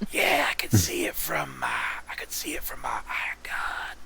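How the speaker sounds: hushed whispered words. A remote participant calls in while the others watch a laser show, whispering. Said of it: "I don't know why I'm whispering".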